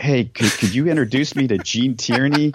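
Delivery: whispered. Retelling a sitcom scene where Coach asks Sam a favor: imitating Coach whispering. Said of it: "he whispers to Sam, he's like".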